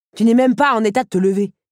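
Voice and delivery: scornful, snickering tone. One character mocks another, sneering. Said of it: "Ricana Henri".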